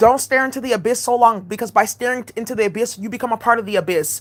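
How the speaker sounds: ordinary delivery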